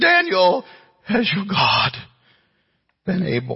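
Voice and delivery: put-on very high, mournful, swooping lamenting voice. Preaching, acting out the king's question to daniel, retelling a lamenting question. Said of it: "he asked it with a lamenting voice".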